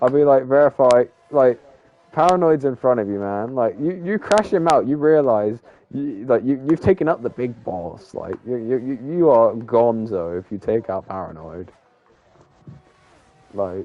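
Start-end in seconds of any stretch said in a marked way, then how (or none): none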